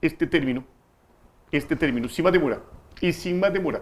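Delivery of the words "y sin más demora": put-on closed-mouth voice, higher pitch. Showing how don Ignacio says his phrase: imitating don Ignacio. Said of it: "don Ignacio usa este término".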